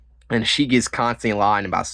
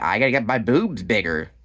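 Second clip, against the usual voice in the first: ordinary talk, nothing marked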